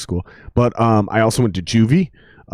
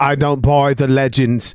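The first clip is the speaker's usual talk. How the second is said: horrible put-on female British accent; 4 semitones higher than usual. Describing the woman in Underworld, the speaker quotes her in a bad female British accent. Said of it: "That's a horrible female British".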